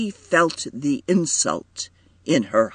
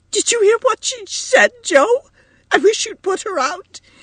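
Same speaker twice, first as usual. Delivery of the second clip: furious, shrill, very high raised voice; 5 dB louder than usual. A narrator reads a character addressing another character, livid with rage. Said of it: "livid with rage".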